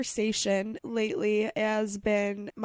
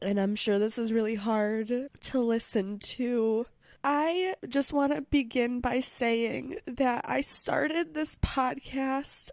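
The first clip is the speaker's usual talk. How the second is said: tearful, crying voice, talking through tears; 3 semitones higher than usual. Podcast host speaking to listeners on the microphone, tearful, crying. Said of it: "why I'm sitting on the microphone crying".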